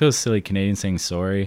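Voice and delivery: ordinary talk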